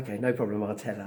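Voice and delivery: ordinary talk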